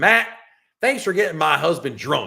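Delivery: put-on deep Southern accent. Retelling what his friend's wife said to him, imitating Denise's deep Southern accent. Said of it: "a deep Southern accent".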